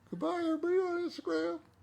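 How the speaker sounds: tiny, very high put-on dog voice. Speaking for the pet dog after asking her to say goodbye: put-on voice for the dog. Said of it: "That's actually not what her voice sounds like".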